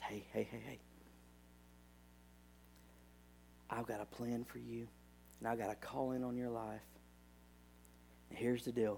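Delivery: soft, gentle, hushed, near-whispered voice. Preaching, voicing God speaking to a believer in prayer: gentle voice. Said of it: "he says with that gentle voice".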